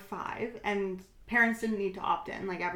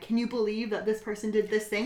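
normal talking voice

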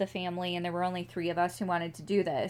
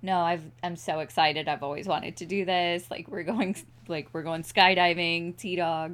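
ordinary delivery

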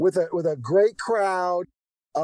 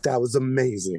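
mock self-satisfied, cocky, very low-voiced delivery; 7 semitones lower than usual. Speaker retells a remark to a person after the theater, retelling a cocky remark. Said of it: "I felt so cocky".

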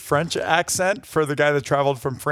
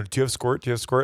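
ordinary talk

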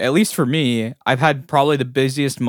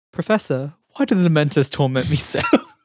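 put-on young boy character voice; 2 semitones higher than usual. Announce your impression, then address the professor in a Harry Potter impression. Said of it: "Here's my Harry Potter impression".

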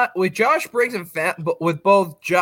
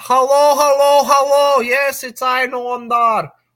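goofy voice, high, loud and drawn out; 6 semitones higher, 5 dB louder than usual. Mocking how Noam Dar talks on the mic: Noam Dar impression. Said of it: "your goofy-ass voice".

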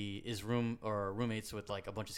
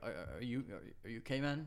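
acted quavering, trembling, stammering voice close to tears; 3 dB quieter than usual. Retelling friends asking a knocked-out friend if he's okay: imitating a trembling voice. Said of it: "trembling in their voice".

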